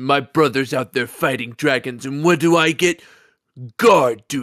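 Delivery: dry, snarky delivery. After the game crashes, a player does a line as a snarky Skyrim guard voice. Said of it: "the one that always sounds snarky".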